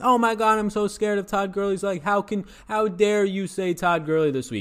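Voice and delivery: loud high-pitched mock shout.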